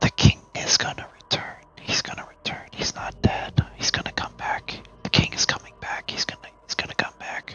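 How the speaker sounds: whispered, repetitive mumbling muttered to oneself. Voicing a figure who repeats the same words over and over: muttering. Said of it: "you can kinda hear the muttering".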